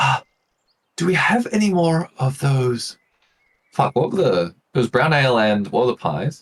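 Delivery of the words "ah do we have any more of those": polite whisper, much higher, slower. Playing a leather-clad elf asking another elf for more, in a polite whisper. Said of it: "she sort of whispers to this uh, elf".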